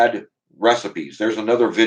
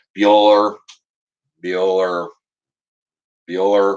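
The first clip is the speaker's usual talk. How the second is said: flat, droning monotone. Mocking a boring professor, the speaker imitates a roll call in a monotone.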